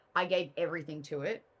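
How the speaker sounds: ordinary talk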